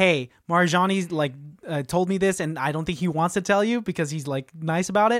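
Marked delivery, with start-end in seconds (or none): none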